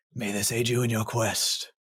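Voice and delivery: very low, deep voice, echoing and reverberating. A game master voices a being speaking from deep in a chasm: very low echoing voice. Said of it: "a very low uh, voice echo from deep in that chasm".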